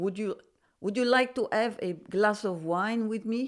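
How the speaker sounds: put-on French accent slipping into Russian accent. Demonstrating a French accent that keeps slipping: French accent sounding Russian. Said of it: "It's still going a bit Russian".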